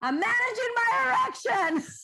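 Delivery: very high, screamed, muffled-sounding voice. A wife retells her husband screaming back from the shower; retelling a scream. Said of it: "he screams back".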